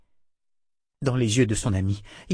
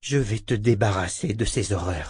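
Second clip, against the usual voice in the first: plain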